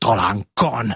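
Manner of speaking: spoken in a hiss. The king answers the queen, who says the newborn is a boy; hissed. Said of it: "sziszegte a király".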